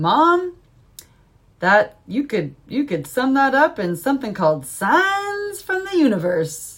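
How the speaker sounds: put-on silly, swooping, funny kid voice. A mother retells what her 10-year-old son says, in his funny voice. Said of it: "makes a funny voice and he goes".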